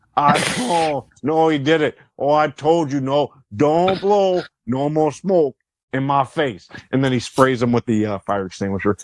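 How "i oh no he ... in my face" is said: put-on Canadian accent. Retelling a wrestler's line to cigarette smoke: Roddy Piper Canadian accent. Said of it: "Roddy Piper with the Canadian accent".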